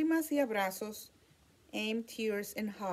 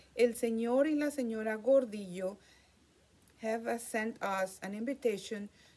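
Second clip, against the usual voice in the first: plain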